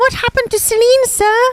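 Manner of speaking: put-on very high, snotty child voice. Playing a student asking a teacher for more: snotty Harry Potter kid voice. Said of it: "That's pretty good".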